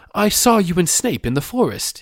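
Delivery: abrupt, sudden blurted outburst, very high. Reading a boy's line aloud from a story, blurting out. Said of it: "he blurted out".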